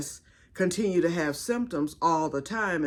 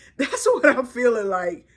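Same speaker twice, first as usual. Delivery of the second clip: talking through laughter, higher and louder; 7 semitones higher, 7 dB louder than usual. Joking about feeling like the Nutty Professor, laughing while talking. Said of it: "Okay, I'm laughing".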